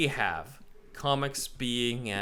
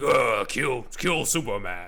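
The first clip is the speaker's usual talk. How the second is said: imitated grunting monster voice, louder; 5 dB louder than usual. Imitating how a monster supposedly talks: imitating a grunting monster voice. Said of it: "it's gonna be like".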